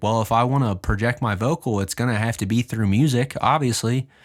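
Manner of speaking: usual speaking voice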